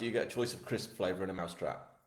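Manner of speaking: ordinary talk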